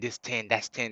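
put-on tone full of attitude. Retelling how a man told them a price, mimicking his attitude. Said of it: "that's like with attitude".

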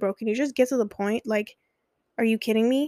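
acted irritated tone. Speaker recalls answering a slow-talking man: retelling irritated self. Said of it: "I was so irritated".

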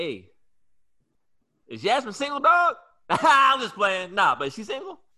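acted very high, swooping, playful teasing voice. Speaker quotes a man they ran into last week, retelling a joking question. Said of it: "he said it jokingly".

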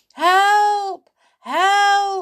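shrill, very high, very loud yell, "help" stretched long. Narrator reads a character drifting on a table boat in a pond, yelling for help. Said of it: "Yelled Sailor".

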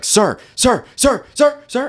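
high, loud screaming, repeated calling out. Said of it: "this Mexican guy was screaming at me".

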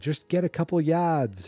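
put-on thick Boston accent. Retelling yelling at a football game on screen in Florida, Boston accent. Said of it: "Massachusetts accent".

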